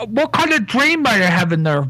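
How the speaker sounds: mouth full while speaking. Character eating porridge in a role-play scene, talking with mouthful of porridge. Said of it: "a mouthful of porridge".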